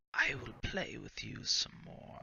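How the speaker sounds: hushed whisper, close at the ear. Voicing an unseen creature that whispers in a player's ear: whispering in your ear. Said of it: "you hear the voice start to fade back".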